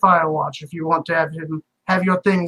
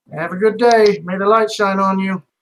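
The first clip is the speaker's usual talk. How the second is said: slow, snide, sarcastic tone. Voicing a character as the party walks away: sarcastic NPC farewell. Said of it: "kinda says sarcastically".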